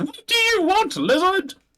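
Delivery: very high, shrill shout. Narrating a scene where a character yells at the talking lizard, yelling at the lizard. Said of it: "he yells at you again and says".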